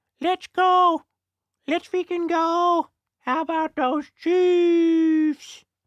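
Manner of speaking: very high, slow, drawn-out pet-dog voice. Speaker signing off to the community, talking as their dog: pretend dog voice. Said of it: "pretending to talk as my dog".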